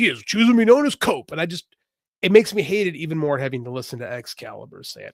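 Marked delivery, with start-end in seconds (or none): 0.0-1.3 high, loud mock announcer voice. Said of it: "when he's like".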